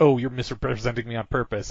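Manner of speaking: plain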